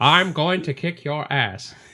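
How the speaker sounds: slow, drawn-out, measured, menacing delivery. Imitating an actor delivering a fight threat: Morgan Freeman voice. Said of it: "attempted a Morgan Freeman".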